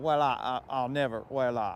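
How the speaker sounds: stuttering cartoon character voice. Talking about classic cartoons, stuttering Foghorn Leghorn impression. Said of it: "he stutters and he's like".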